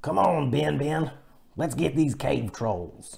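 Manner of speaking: high, rough, raspy cowboy voice. Explaining the voice used for a character they drew: Master Momo cowboy voice. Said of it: "it's almost like a cowboy voice".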